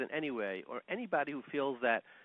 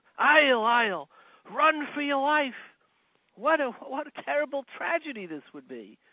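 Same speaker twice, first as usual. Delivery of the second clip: mock scream at top of lungs, much higher, louder; 12 semitones higher, 10 dB louder than usual. Telling a story, the speaker acts out a man's cry: imitating screaming at top of lungs. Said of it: "he starts screaming at the top of his lungs".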